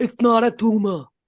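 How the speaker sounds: put-on Austrian action-hero accent. Quoting a movie line the way the actor goes, Arnold Schwarzenegger impression. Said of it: "when like Arnold Schwarzenegger goes".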